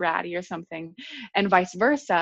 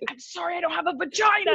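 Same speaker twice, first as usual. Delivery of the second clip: put-on angry, dead-serious, mad delivery; 11 semitones higher than usual. Recounting a phone argument, quoting what he said: imitating someone angry. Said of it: "he was so mad".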